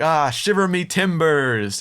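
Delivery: uncomfortable, slow speech. Retelling a film scene where new pirates cheer: imitating Murtagh and Mulroy awkwardly. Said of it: "Murtagh and Mulroy are just so awkwardly like".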